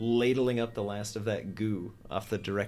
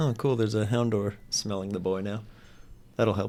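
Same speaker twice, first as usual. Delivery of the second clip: flat, dry, expressionless deadpan delivery. Voicing her reaction to the sentence, deadpan. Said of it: "She just deadpan stares ahead".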